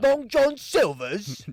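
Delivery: put-on British accent. Asked to name fast food places in a british accent, speak in a british accent. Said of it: "Can you say like all the fast food places in a British accent?".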